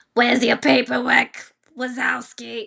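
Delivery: loud, slow, rough, drawn-out drawl. Imitating a coworker nicknamed after Roz: Roz voice from Monsters, Inc. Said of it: "we call her Roz, like in Monsters, Inc".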